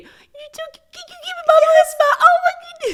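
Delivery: put-on very high-pitched baby talk voice. Imitating how Katie talks to visiting babies, Katie's baby voice. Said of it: "Katie has the best baby voice".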